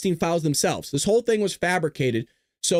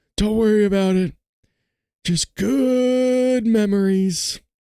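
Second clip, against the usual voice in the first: slow, high, creepy voice, "good" stretched out; 5 semitones higher, 4 dB louder than usual. Joking about Epstein's island, doing a Joe Biden impression. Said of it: "I love my Joe impression".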